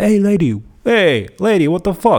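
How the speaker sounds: very high, catcalling holler. Retelling a film scene where a character calls to a woman: imitating a catcall. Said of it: "he kind of catcalls her".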